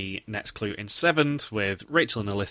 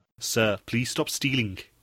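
put-on, attempted South African accent; 2 semitones higher than usual. Asked to do a south african accent, speaker tries a line: south african accent. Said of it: "Can you do the rest of the podcast in a South African accent".

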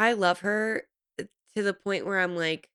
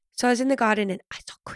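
put-on whisper, higher pitch; 4 semitones higher than usual. Imitating a cast member who whispers every conversation: imitating Joanna whispering. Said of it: "I love your impression".

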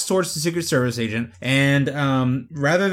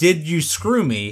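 plain

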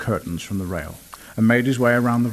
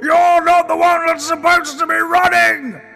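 very high, roaring, booming bellow; 7 dB louder than usual. A batsman shouts after a boy who is running away, bellowing. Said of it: "Bellowed the batsman after the boy".

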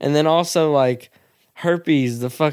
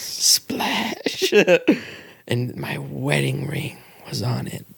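sexy, whispering woman's voice. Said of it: "I'm just whispering".

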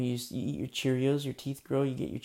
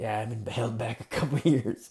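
big, hulking, heavy bass put-on voice. Retelling a guy's answer when asked what his story is, imitating a big deep voice. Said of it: "he's got this big, deep voice".

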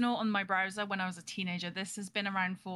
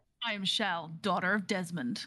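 very slow, drawn-out put-on American accent; 4 semitones lower than usual. Saying a mock heroic introduction in a put-on american accent. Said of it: "Why did I do that in an American accent?".

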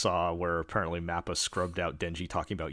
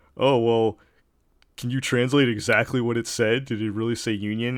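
loud, put-on pedantic, nitpicking know-it-all tone; 5 semitones higher, 6 dB louder than usual. Retelling an online argument, mimicking a nitpicking commenter. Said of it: "one of those type of assholes that's like".

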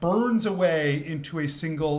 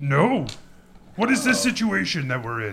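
put-on puppet-style orc creature voice. A roleplay character answers whether they have met before, orc Muppet voice. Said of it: "orc Muppet voice".

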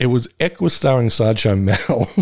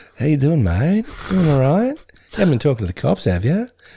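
friendly, chatty, easy-going matey voice; 2 semitones higher than usual. Imitating a charity collector approaching people: Ben Mendelsohn impression. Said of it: "my impression of Ben Mendelsohn".

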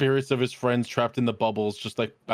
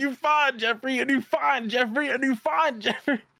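mock yelling, higher pitch; 12 semitones higher than usual. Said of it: "Why are you yelling, 'You fine Jeffrey,'".

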